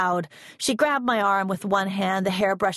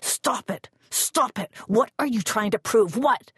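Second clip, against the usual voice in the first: hissed whisper through clenched teeth; 2 semitones higher than usual. She shuts the bedroom door and shakes the narrator, whispering through clenched teeth. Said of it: "whispering through clenched teeth".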